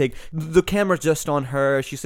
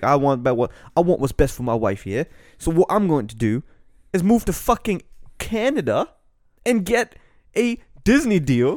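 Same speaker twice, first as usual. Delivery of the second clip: clumsy, badly done fake English accent; 2 semitones higher than usual. Acting out a multimillionaire prince deciding what is best for his wife, in a bad English accent. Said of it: "Why are you laughing at my fucking English accent?".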